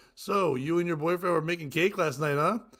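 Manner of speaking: ordinary talk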